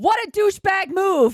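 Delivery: very loud, shrill, full-throated yell. Retelling a driver who yelled at a dog walker: imitating someone yelling. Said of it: "rolled down the window and yelled".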